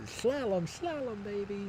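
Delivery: very high character voice, big lisp on slalom. Describing a skiing character's moves, quoting him with a big lisp. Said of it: "He's got that big lisp".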